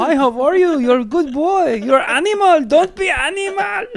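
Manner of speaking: put-on Middle Eastern accented speech. Telling clean jokes to kids in an audience, imitating his dad's Middle Eastern accent. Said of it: "had an accent".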